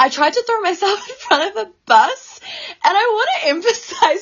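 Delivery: very high-pitched voice talking through laughter. Recounting a breakdown with dark humor, laughing while talking. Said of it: "sorry, I'm laughing".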